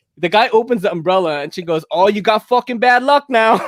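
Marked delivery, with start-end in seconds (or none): 1.9-3.6 put-on heavy New York Italian accent. Speaker retells what a woman said after a man opened an umbrella, in a heavy New York Italian accent. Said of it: "had that New York City kind of like heavy Italian accent".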